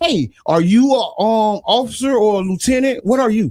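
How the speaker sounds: ordinary talk, nothing marked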